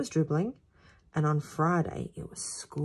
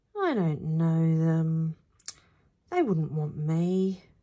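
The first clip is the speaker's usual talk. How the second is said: timid, self-conscious, shy and bashful. Bruno answers his mum's suggestion shyly. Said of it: "said Bruno shyly".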